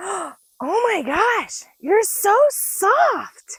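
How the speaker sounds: put-on high, very slow, awed little kid voice.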